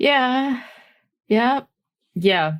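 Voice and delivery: anxious, high-pitched voice. [name] answers Kira asking if they're going to do this, anxious tone. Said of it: "noting that tone of anxiousness".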